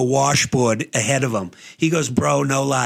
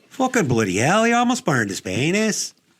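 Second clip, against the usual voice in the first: put-on Scottish accent with swooping tune; 3 semitones higher than usual. Telling a story about a crash, joking in a put-on Scottish accent. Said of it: "That was kinda like my Scottish accent".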